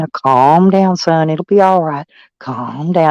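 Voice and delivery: imitated low whisper. Retelling calming down a screaming boy: imitating own low whisper. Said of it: "I got to whispering real low".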